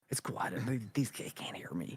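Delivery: very quiet, hushed whisper under the breath. Acting out someone whispering on a call, thinking the kids can't hear: acting out whispering. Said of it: "I'm just whispering".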